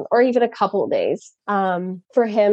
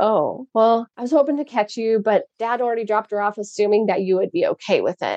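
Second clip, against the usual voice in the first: normal talking voice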